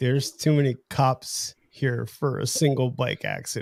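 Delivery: ordinary talk, nothing marked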